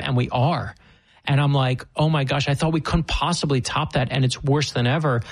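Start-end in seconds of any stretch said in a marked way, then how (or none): none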